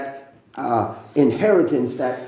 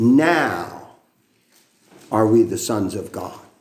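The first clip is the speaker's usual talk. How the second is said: now leaned on hard, heavy stress; 4 semitones lower than usual. Reading 1 John chapter 3 verse 2 aloud, stress on now. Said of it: "I emphasize that word now".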